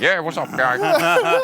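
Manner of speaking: talking out the mouth's side. Showing how one used to speak English: imitating own past side-of-mouth English. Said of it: "när jag pratade engelska så pratade jag så här".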